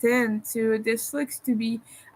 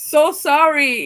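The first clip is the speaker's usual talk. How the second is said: exaggerated Canadian accent, loud and high-pitched; 5 semitones higher, 7 dB louder than usual. Quoting Ogre apologizing to the speaker, in a super Canadian accent. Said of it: "super Canadian accent".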